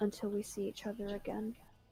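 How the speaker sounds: whispering under breath. Speaking in character to a companion beside, whispering under breath. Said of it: "whisper under my breath".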